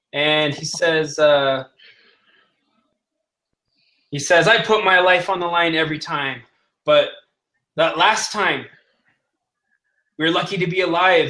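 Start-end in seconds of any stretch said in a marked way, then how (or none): none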